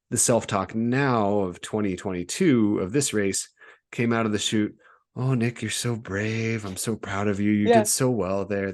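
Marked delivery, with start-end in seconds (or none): 5.1-8.7 put-on nice, caring tone, pitched higher. Retelling kind self-talk from a race: put-on nice caring voice. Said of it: "just a nice little caring voice".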